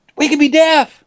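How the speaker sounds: blurted out high and alarmed.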